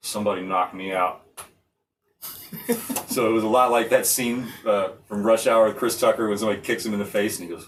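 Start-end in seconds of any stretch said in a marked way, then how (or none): 0.0-1.2 dazed, groggy, like just waking up. Retelling how a guy reacted after being knocked out, imitating Dontrell waking up. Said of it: "my impression of him after he wakes up".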